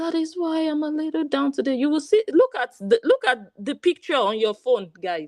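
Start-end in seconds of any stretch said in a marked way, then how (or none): 0.0-1.7 mocking soft voice, pitched higher. Speaker mimics a woman they call a scammer, in a mock soft voice. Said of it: "The combination of the soft voice".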